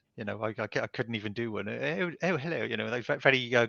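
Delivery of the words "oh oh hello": well-spoken posh English accent, pitched up. Imitating the audiobook narrator's way of speaking: posh English accent. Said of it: "what I would call a posh accent".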